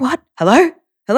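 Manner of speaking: put-on groggy half-asleep voice. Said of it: "literally half asleep".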